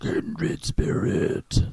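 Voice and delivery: very loud, breathy death-metal style bellow. Trying the phrase again after the last try is called a chicken-out; death metal style voice. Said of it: "It was almost like death metal".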